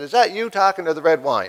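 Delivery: normal talking voice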